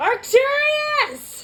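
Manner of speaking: long, high, loud, drawn-out yell. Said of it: "I'm just gonna yell".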